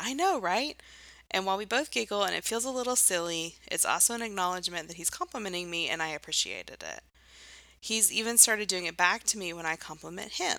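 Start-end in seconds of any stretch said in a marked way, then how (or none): 0.0-0.8 play-acted bubbly, eager, excited, pitched-up voice. Retelling how a partner's compliment gets answered, imitating an excited reply. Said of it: "I will excitedly say".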